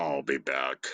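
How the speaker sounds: very low, deep, plain cyborg voice. Performing a movie line after being asked: Terminator impression. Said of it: "let me do the "I'll be back."".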